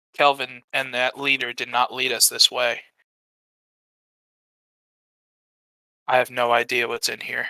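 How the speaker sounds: very quiet, barely audible half-whisper, breath only. Leaning close to a companion to warn her: half-whispering very quietly. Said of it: "I'm gonna whisper very quietly".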